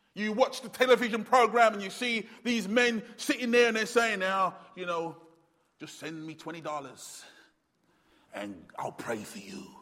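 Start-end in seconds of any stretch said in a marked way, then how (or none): 4.2-9.7 low, hushed, put-on American accent. Quoting the men seen on a television program: put-on American accent. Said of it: "It was always an American accent".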